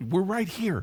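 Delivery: mock old newsreel announcer, high, screaming yell. Mocking old movie announcers, imitating someone yelling. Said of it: "Why are you yelling?".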